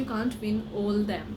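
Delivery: ordinary delivery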